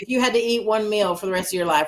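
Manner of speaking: plain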